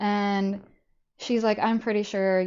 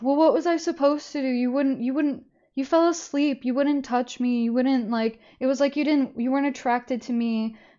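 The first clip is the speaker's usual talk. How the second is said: mock crying, high, tearful voice; 5 semitones higher than usual. Speaker acts out a man who starts crying and gives a sob story: imitating someone crying. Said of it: "he just starts crying".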